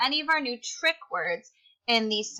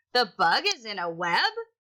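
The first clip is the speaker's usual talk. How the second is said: questioning upward rise on the word web. Rereading a sentence aloud, reading it like a question. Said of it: "we have to read it like a question".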